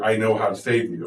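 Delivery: ordinary talk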